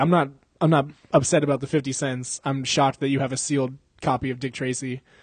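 ordinary talk

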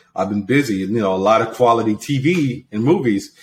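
plain

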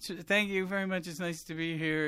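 weepy, tearful voice, in tears. Retelling an old stand-up act where he cries on stage: imitating own tearful stage bit. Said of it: "And I'm in tears".

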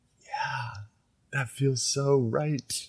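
teary, tearful voice, pitched very high. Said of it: "start tearing up".

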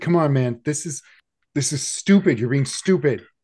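loud, high yell of pain. Voicing a character whose arm is twisted, yelling out in pain. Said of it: "he's going to kinda yell out as you twist his arm".

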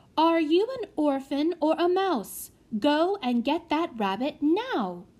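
sharp, high, deliberate snapped tone. Speaking to a hesitant boy about fetching a rabbit, snapped. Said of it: "snapped Prudence".

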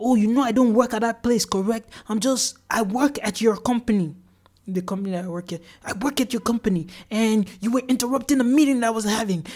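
put-on mild, half-hearted yelling with a scolding edge. Quoting a woman who called back about work, retelling her yelling. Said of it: "she's calling me back and she's yelling".

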